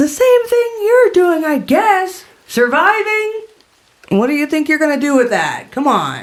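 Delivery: high, animated, swooping woman's voice calling out. Voicing a hidden woman answering from inside a cave, calling out. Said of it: "The woman's voice calls out and she goes".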